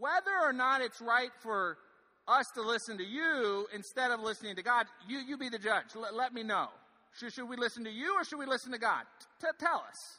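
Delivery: mocking, sarcastic. Retelling Peter and John's answer to those who would arrest them, with sarcasm. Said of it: "There's a little bit of sarcasm right now going on".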